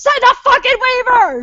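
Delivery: very high, screamed drill-sergeant voice. Retelling how a big guy demands a signed waiver: imitating screaming like a drill sergeant. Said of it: "he's screaming like a fucking drill sergeant".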